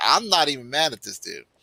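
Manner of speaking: normal talking voice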